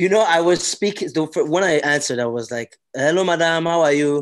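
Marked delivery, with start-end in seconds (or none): 2.9-4.2 put-on played-up Nigerian accent, more feminine. Speaker retells answering a woman on a call; retelling own exaggerated nigerian voice. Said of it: "I exaggerated my voice a bit".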